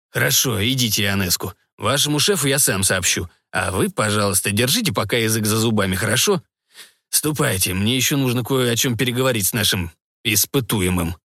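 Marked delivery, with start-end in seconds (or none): none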